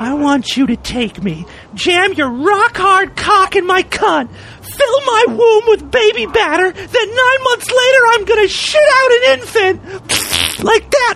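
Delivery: very high put-on woman's voice. Repeating their earlier line, this time said like a woman. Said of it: "if I said it like a woman".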